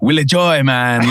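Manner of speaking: put-on mixed Australian-Japanese accent. Imitating a friend's accent, Australian meets Japanese: imitating a friend's Australian-Japanese accent. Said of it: "That's actually a pretty good imitation".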